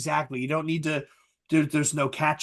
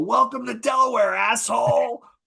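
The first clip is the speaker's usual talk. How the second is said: mock furious shouting, high-pitched angry yell; 8 semitones higher, 4 dB louder than usual. Retelling shouting out the car window at a fly, retelling a yell. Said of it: "I look out the window and I yell".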